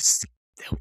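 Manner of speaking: unvoiced, breathy whisper.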